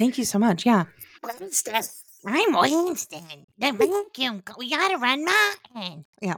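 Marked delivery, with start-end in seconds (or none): 1.4-6.1 unhurried, deliberate, slow, drawn-out way of talking. Imitating how Winston talks about running the vacuum: Winston impression. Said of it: "a really good impression".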